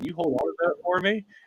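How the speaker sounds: high, fast mock tone. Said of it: "I'm like".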